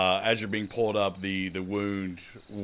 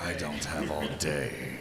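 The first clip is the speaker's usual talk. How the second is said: slow, drawn-out, hushed stage whisper; 4 semitones lower, 4 dB quieter than usual. Voicing a half-whisper heard in a player's ear: half-whisper. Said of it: "you hear a whisper".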